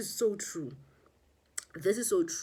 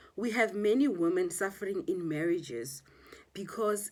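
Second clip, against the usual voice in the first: ordinary delivery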